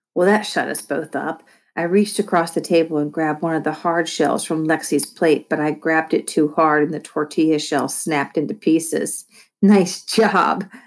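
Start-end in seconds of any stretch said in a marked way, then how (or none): 9.6-10.6 gleeful chortling, higher pitch. At the table, someone teases the narrator for snapping a taco shell, chortling. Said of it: "Lexi chortled".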